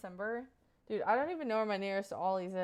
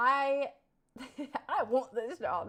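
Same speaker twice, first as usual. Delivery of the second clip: slow, toned-down, light country accent; 4 semitones higher, 4 dB louder than usual. Practicing a job-interview line again, in a toned-down country accent. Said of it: "say it a little bit less uh, country".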